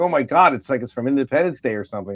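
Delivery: ordinary delivery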